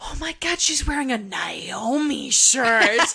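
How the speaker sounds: theatrical whisper. Retelling what a little girl said to her mom: imitating a little kid's loud whisper. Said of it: "little kid whispered, so we could clearly hear her".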